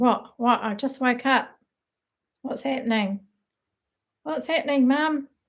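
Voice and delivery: put-on pet dog voice. Speaking for the dog Sid, who has just woken up, voicing Sid the dog. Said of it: "He's going".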